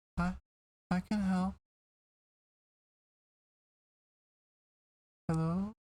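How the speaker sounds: put-on teeny little voice. After screaming as loud as you can, the reply comes back in a teeny little voice. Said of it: "you get back this teeny little voice".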